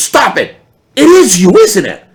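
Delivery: high, loud, thrilled, starstruck disbelieving gush. Recounting how a woman in a shop recognized him and reacted; doing her voice, imitating a starstruck fan. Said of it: "completely starstruck".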